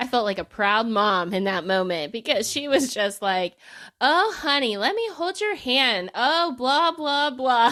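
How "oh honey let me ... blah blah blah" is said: needling, taunting, high, mocking sweetness. Retelling what a twelve-year-old said about someone on TV: imitating a niece mocking someone. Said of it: "she was just laying into poor Amanda".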